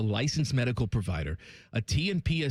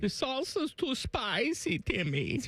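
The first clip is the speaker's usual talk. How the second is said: put-on German accent, much higher pitch; 12 semitones higher, 3 dB quieter than usual. Telling a silly tale about a German dork, in a German accent. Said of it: "do you like my German accent".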